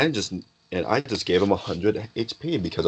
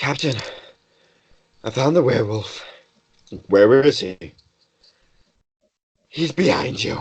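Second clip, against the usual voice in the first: panting hobgoblin voice, higher and slower; 4 semitones higher than usual. Narrating to players, voicing the hobgoblin Jasmine running up to the captain, panting. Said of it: "She's panting like".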